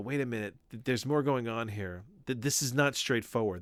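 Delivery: normal talking voice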